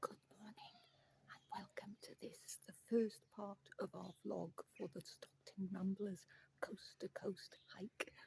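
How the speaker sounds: very quiet, hushed whisper, barely above a breath. Opening a hiking vlog very early in the morning, whispering. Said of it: "I'm whispering because it's actually very early".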